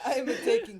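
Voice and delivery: put-on Russian accent, loud and high.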